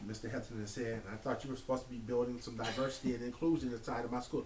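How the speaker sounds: ordinary talk, nothing marked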